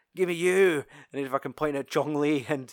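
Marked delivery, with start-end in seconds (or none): 0.2-0.8 acted brash, swaggering, loud, cocky high voice. Retelling a film scene, quoting a fighter's challenge: imitating a loud cocky character. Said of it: "this big fucking positive character, and he's like".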